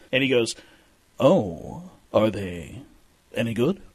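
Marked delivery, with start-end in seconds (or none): 1.2-3.7 very slow, drawn-out, word by word delivery. Retelling meeting William Shatner and offering him a cigar: William Shatner impression. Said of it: "When you do that impression".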